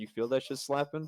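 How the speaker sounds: quiet, soft, hushed stage half-whisper. Acting out a joke line said behind a guy: half-whispering. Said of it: "just whisper, he goes".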